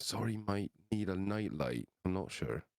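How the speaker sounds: whispering in a character voice. Voicing a character asking the group for a light: whispering in character. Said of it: "he's gonna whisper".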